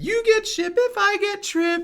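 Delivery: very high, slow, drawn-out character voice. Showing how the character says the line: Wheelie voice. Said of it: "so he says it like this".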